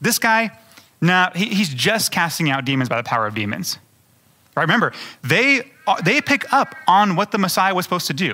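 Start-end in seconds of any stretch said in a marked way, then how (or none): none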